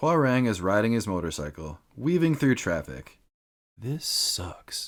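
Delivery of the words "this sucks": breathy, whispered grumbling mutter under the breath. Reading a game ending aloud, the rider's line while weaving through traffic, muttering to himself. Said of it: "he mutters to himself".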